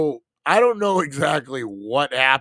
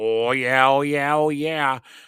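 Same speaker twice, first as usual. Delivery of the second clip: put-on odd Midwestern accent in a woman's voice. Repeating how the speaker's own greeting just sounded, weird midwestern woman voice. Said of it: "Sound like some weird Midwestern fucking um half wife".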